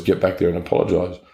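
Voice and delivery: plain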